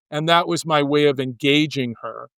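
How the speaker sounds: normal talking voice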